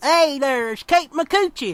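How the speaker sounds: light hillbilly twang on words. Showing how the phrase sounds said with a little hillbilly twang. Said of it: "with a little hillbilly twang".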